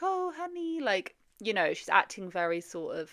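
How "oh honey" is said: put-on soft, very high, cutesy childlike baby voice. Imitating how she talks in her series: soft baby voice. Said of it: "her whole like soft, like people call it like a baby voice".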